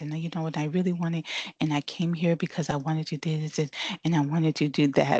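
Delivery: put-on very low, soothing voice. Speaker imitates a young lady she interviewed: imitating a very low voice. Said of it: "Like she talked like this".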